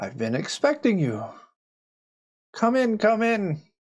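put-on soft elderly woman's voice. A game narrator voices a woman greeting the players at an open door, in a soft elderly woman's voice. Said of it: "you hear a soft voice, sounds like an elderly woman".

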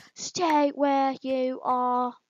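slow, level, dead flat, droning robot voice. With a line stuck in their head, the speaker does a Dalek voice. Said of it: "A Dalek just being like".

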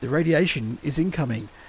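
ordinary talk

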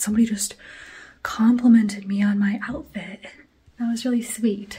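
short of breath, winded. Talking to viewers after walking up the stairs, out of breath. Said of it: "I'm out of breath from walking up the stairs".

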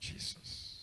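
soft whispered voice. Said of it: "I will tell you what to whisper".

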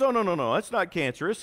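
usual speaking voice

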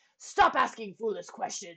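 quick, sharp, irritable snapping tone. The king answers Bartholomew's question, snapping at him. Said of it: "snapped the king".

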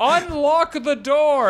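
high, slow, mild mock yell.

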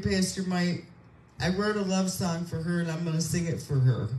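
ordinary talk, nothing marked

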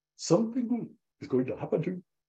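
put-on high, cute Indian accent. Retelling how he closed a prayer, in a cute indian accent. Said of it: "with this cute Indian accent".

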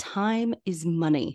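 ordinary delivery

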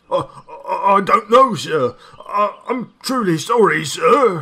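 stammering. Reading a story, the narrator voices Richard answering a question, stammering. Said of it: "Richard stammered".

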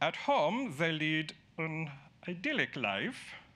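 put-on German accent. Quoting a German-born man on Batman and Robin, in a fake German accent. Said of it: "I'm going to use a fakey German accent".

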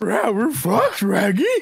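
animated dog character voice. Discussing salary cap trouble with the guys, the speaker answers his own request, Scooby-Doo voice. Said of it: "we're fucked in a Scooby-Doo voice".

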